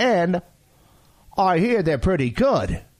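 plain Australian accent. Talking about Tim Tams at Costco, in an Australian accent. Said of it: "It's my Australian accent".

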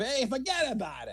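New York mobster accent. Demonstrating the accent just used to the others, in a Sopranos-type New York accent. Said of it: "It was like Sopranos type".

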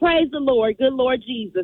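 plain

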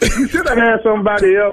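talking while laughing through the words.

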